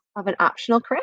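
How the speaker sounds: usual speaking voice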